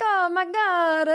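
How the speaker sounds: put-on lilting Italian accent, lifted high. Retelling how a man reacted while telling a story, in a lilting Italian accent. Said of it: "he has a lilt in his voice, like someone with an Italian accent".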